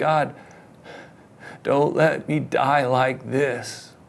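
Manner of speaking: slow, sobbing, crying voice. Retelling his little boy's prayer from his bed, imitating son praying through cries. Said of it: "my little boy pray through his cries".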